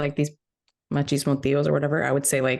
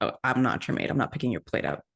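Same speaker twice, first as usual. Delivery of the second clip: mock sassy, breathy, half-whispered tone; 4 semitones lower, 5 dB quieter than usual. Retelling a reply to older men in the family: imitating own sassy retort. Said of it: "really, really sassy that day".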